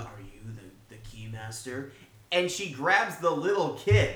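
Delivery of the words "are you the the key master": very quiet, low, hushed, barely audible demonic voice. Describing a scene where an actress copies a possessed character, Dana Barrett demon voice. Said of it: "She's doing the demon voice".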